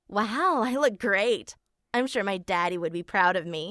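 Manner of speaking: normal talking voice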